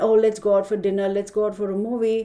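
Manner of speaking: normal talking voice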